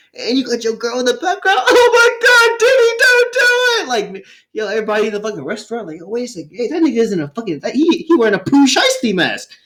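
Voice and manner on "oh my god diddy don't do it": shrill sobbing plea, very high, drawn-out. Imitating the girl in the background during the fight, crying like Mary Jane. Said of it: "she crying like Mary Jane".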